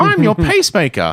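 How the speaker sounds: very high-pitched, loud, tiny character voice. Pitching a story, voicing the pacemaker. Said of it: "And he's like".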